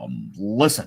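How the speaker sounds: weak, hesitant delivery with stressed "um". Showing the only way they can do an Obama impression. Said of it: "the only way I can do Obama is like".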